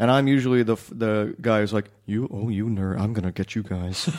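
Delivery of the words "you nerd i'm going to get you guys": put-on creepy voice, much lower. An actor acts out the guy he usually plays in scenes with kids, put-on creep voice. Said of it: "That was my pedophile voice".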